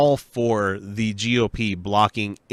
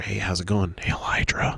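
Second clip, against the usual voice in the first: acted-out whisper; 3 semitones lower, 4 dB quieter than usual. Acting out someone whispering a greeting into everyone's ear: acting out a whisper. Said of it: "He just whispers into everybody's ear".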